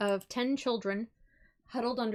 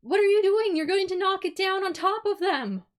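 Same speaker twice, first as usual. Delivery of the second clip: very loud, very high-pitched shrieking scream; 10 semitones higher, 8 dB louder than usual. Voicing a villager reacting to a player punching the building wall: villager screaming. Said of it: "one of the villagers screams".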